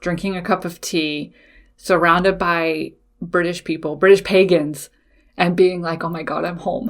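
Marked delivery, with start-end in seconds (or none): 6.0-6.9 voice trembling with emotion, quieter. Recalling the moment of feeling at home: trembling, emotional voice. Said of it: "you probably hear the little tremble in my voice".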